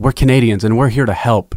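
put-on voice with lots of breath. Quoting a line from a UN speech: breathy Justin Trudeau voice.

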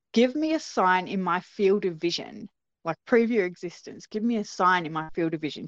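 normal talking voice

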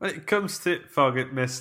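increasingly northern English accent.

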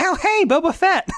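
put-on, very high, drawn-out, thrilled exclamation. Retelling a character's reaction to a Boba Fett figure: excited Dave imitation.

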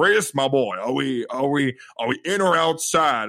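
slow, drawn-out, deliberate in-character voice. Retelling what the actor playing Jack Baker said at the table: imitating Jack Baker. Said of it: "the guy playing him turns to me and goes".

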